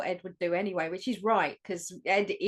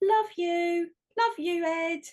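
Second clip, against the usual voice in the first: put-on dramatic tone, higher; 10 semitones higher than usual. Retelling a lift scene, the goodbye line: imitating Liz's dramatic goodbye. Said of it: "it was the way she says it".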